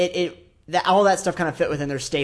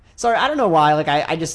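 ordinary talk, nothing marked

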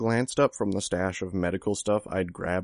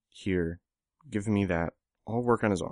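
plain reading voice

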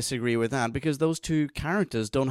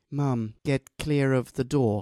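dead flat, drab, toneless and dreary delivery. Quoting a favorite line of Jake McGann's: Jake McGann impression. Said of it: "That's an excellent impression".

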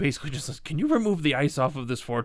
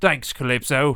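strong, heavy put-on British accent; 3 dB louder than usual. Rehearsing a scripted line, trying it in a thick British accent. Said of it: "Thick British accent".

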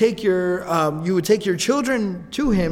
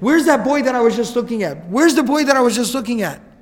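frantic, panicked, nervous calling out; 4 semitones higher, 4 dB louder than usual. Telling a story, voicing a fortune teller who lost sight of a boy, acting out panicked calling. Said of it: "he sounds kind of like he's panicking".

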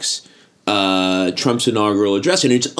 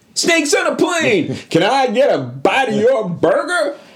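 shrill, very high, full-on scream; 12 semitones higher than usual. Mocking an actor who plays the same character everywhere: imitating Samuel L. Jackson screaming.

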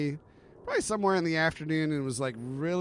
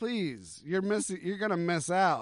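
put-on pleading tone; 2 semitones higher than usual. Retelling how a woman pleaded over the phone: imitating someone pleading. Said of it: "she starts pleading with me".

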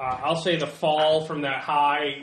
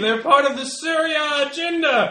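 shrill, very high screaming; 11 semitones higher, 6 dB louder than usual. Voicing a second attacker charging the players: screaming. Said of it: "the other one is screaming".

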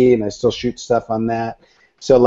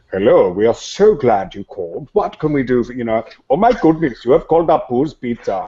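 comical, goofy put-on phone voice. Recalling racing siblings to answer the family phone as a child; comical phone voice.

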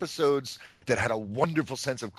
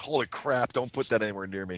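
normal talking voice

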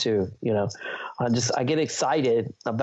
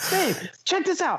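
mock loud excited talking, higher. Retelling talking gear in a restaurant: imitating own loud excited talking. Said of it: "You're talking real loud".

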